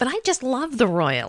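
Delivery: put-on dated, old-fashioned grandmotherly voice. Asked to say a sentence in another voice, a guest uses an old-fashioned grandmother voice. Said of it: "You sound like my grandmother".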